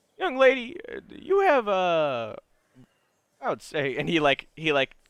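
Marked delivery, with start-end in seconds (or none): 0.2-4.0 joking laugh while talking, higher. Voicing an older gentleman greeting a young lady: laughing in a joking way. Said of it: "he kinda laughs in a joking way".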